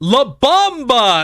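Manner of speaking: high-pitched yell. Imitate the Marine in the Warthog's gunner seat: KZ yelling in the whitest voice. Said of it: "In the whitest voice I've ever heard".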